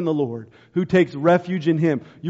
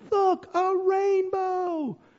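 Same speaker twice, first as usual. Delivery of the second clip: play-acted very high little girl's awed shout; 13 semitones higher, 6 dB quieter than usual. Retelling a child spotting a rainbow: imitating Sybil shouting. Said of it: "And she's shouting".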